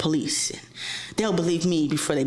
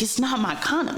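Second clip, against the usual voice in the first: put-on crying, high and tearful; 7 semitones higher than usual. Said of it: "he's crying to me".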